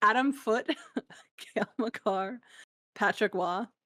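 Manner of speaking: giggling and laughing through the words. Reading out a list of team names with the giggles: laughing while talking. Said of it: "I just got the giggles".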